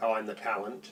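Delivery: dry, level, flat deadpan delivery. Responding to someone who joined the show later, deadpan. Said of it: "you said it so deadpan".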